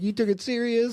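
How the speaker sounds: very high, upset, crying yell. Recapping a scene, the speaker retells Brendan yelling at her: retelling Brendan yelling. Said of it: "He's like yelling at her".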